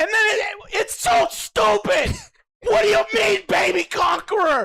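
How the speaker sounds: very high, climbing, rising shout. Ranting with friends about a show, yelling. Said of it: "Why are you fucking yelling, dude?".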